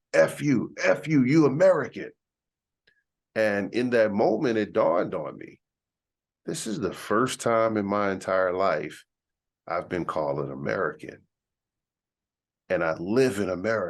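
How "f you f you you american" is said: loud, high-pitched yelling. Retelling a man at the car yelling at him: imitating a man yelling and screaming. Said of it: "he's yelling and screaming".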